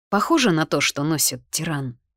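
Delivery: plain reading voice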